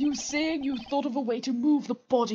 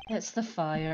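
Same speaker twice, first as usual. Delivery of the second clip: put-on low, quiet, deflated, beaten-down mutter; 6 semitones lower, 6 dB quieter than usual. Telling Coco how the earlier answer sounded, imitating Coco sounding defeated. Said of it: "you sounded so defeated there. You were like".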